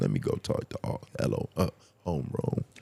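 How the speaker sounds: play-acted barely awake breathy whisper. Teasing someone about recording messages right after waking: imitating a just-woken voice. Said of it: "as soon as you wake up, he's like".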